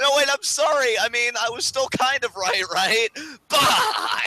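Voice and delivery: high-pitched, loud, begging pleading.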